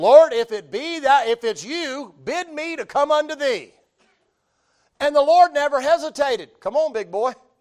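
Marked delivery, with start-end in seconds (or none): 0.0-3.7 play-acted brash, bold, confident tone. Retelling a call to the Lord from a boat: imitating a bold, brash call. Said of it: "he says boldly, brashly".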